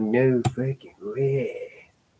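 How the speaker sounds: put-on slow, drawn-out biker accent. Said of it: "He's giving him that, that accent".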